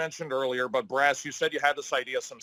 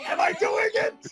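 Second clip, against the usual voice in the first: very high, shrill, stagey projecting yell; 3 dB louder than usual. Doing an impression of Thespio for the audience, mock yelling as Thespio. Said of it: "This is me yelling! This is me projecting!".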